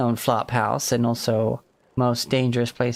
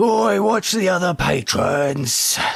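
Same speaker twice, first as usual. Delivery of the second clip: slow, booming, bellowing voice of authority; 6 semitones higher, 4 dB louder than usual. Voicing someone in a crowded tavern stopping a fight: bellowing, commanding voice. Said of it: "you'd hear this bellowing, commanding voice".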